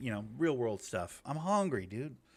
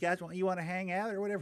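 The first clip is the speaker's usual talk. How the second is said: put-on old lady voice, much higher pitch; 7 semitones higher than usual. Retelling what a friendly woman said to the group: imitating Granny's old lady voice. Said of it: "she has an old lady voice".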